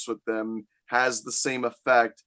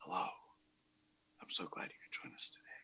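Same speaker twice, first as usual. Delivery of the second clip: hushed, very soft asmr whisper; 6 semitones lower, 20 dB quieter than usual. Opening the podcast episode, the host welcomes listeners in a mock ASMR voice. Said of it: "How's that for some fucking tingles?".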